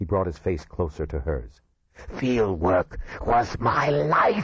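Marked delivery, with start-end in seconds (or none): 2.2-4.5 slow, sibilant, rising hiss. Reading a novel aloud, a character answers her, hissing. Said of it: "he hissed".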